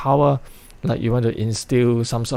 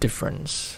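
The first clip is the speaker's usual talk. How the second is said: word difference heavily stressed, leaned on hard; 4 semitones higher, 7 dB quieter than usual. Demonstrating how a speaker delivers a speech line, stress on 'difference'. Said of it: "his emphasis on difference".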